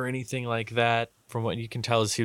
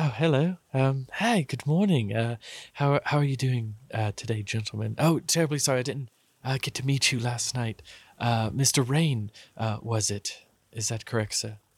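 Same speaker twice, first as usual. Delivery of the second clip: put-on shifty character voice. Voicing Willis greeting the party in the morning: shifty Willis voice. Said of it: "Willis gets up and he comes over and he says".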